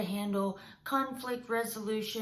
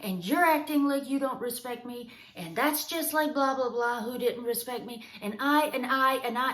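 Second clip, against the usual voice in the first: loud, escalating, speeding-up irate rant; 2 semitones higher, 4 dB louder than usual. Demonstrating how a person who feels disrespected escalates: getting louder and faster. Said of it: "they're getting louder, they're getting faster".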